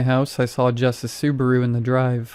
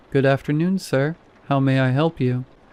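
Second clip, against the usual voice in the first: shaky, trembling yet soothing voice. Reading an elderly man at a funeral home front desk greeting a visitor: shaky yet soothing voice. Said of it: "he said in a shaky yet soothing voice".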